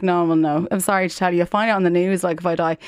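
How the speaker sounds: ordinary talk, nothing marked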